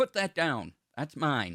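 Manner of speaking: loud, high, clanging metallic voice. Game master voicing a being in armor emerging from a portal, metallic voice. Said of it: "you hear this metallic voice saying".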